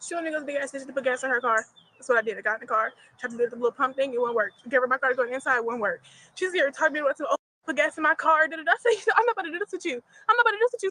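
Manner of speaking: very fast, nonstop, rattled-off rant. Explaining what happened at the gas station after being told to relax; talking very fast. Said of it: "why it sound like I got the fucking shit in fast forward".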